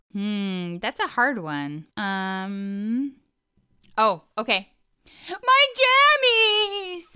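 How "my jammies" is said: very high cartoon thief voice, crying out. Doing an impression of a thief whose jammies were stolen, when asked. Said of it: "So do an impression of a character".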